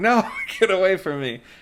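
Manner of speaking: high, frantic, panicked screaming. Telling a story about being chased by someone holding a baby: retelling a panicked scream. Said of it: "I'm like screaming".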